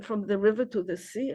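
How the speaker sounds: usual speaking voice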